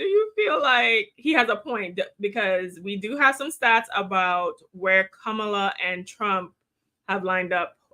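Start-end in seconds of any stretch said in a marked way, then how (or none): 0.0-2.0 talking through laughter, words broken by giggles. After apologizing for laughing too much, a host asks a guest: laughing while talking. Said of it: "I'm laughing too much".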